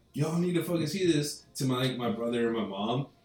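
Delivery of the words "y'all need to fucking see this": high-pitched screaming. Running down the stairs to his brother and mom, retelling a scream. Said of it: "And I'm like screaming".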